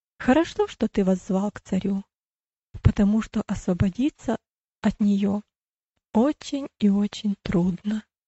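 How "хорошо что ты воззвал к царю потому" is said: usual speaking voice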